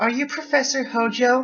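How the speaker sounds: very high, put-on anime girl voice. Urged to do the voice while reading a story aloud: anime girl voice. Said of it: "just do the anime girl voice".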